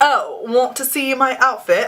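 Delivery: clumsy, unconvincing put-on British accent. Asking viewers if they want to see the outfit: bad british accent. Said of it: "I said it in a British accent".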